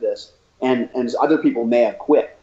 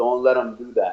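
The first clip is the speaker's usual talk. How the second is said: strong put-on Brazilian accent. Retelling what the coach told the speaker, in a thick brazilian accent. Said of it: "he had a thick Brazilian accent".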